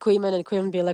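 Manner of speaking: ordinary delivery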